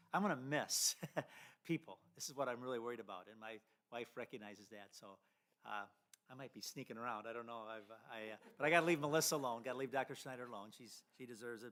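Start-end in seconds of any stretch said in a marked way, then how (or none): 0.1-3.2 emotional, choked up, voice catching on words. Saying farewell to the board and community: choking up. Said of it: "if I'm choking up".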